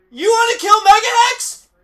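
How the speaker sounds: loud high-pitched yelling. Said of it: "I'm just yelling at the movie going".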